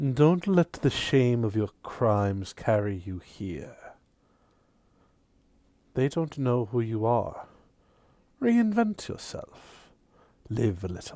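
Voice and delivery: very low, hushed, barely-there half-whisper. As Arius, quietly advising the player's character before walking out, barely above a half-whisper. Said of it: "goes in a very low voice, barely above a whisper".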